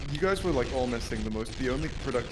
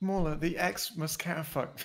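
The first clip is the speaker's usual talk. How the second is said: put-on little boy voice, much higher; 5 semitones higher than usual. Quoting a kid who swears in front of Anakin, little boy voice. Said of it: "say this in a little boy voice".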